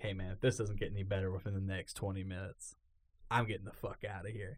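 whispering. Telling how a movie was bad, repeating what he whispered to him: retelling a whisper. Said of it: "I whispered to him".

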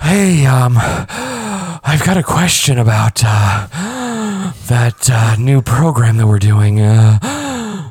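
put-on winded, high, very slow, drawn-out uh. Imitating a coworker on calls: imitating someone out of breath. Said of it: "she literally is out of breath just talking".

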